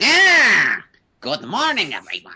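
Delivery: stretched ah, swooping very high and loud. Greeting everyone after being introduced as Skeletor: Skeletor voice. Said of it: "Joining me is, uh, Skeletor".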